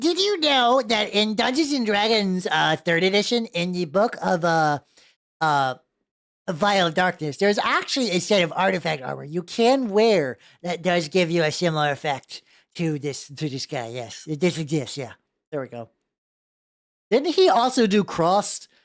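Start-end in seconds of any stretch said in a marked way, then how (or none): 0.0-14.9 put-on geeky nerd voice. Sharing a tabletop role-playing game fact with co-hosts, in the nerd voice. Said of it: "I need to do the nerd voice".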